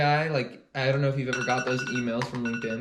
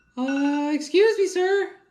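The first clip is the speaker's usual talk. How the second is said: put-on very high, slow, timid, unsure little-kid voice; 5 dB louder than usual. Imitating someone who has this voice: unsure shy kid voice. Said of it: "I'm imitating someone".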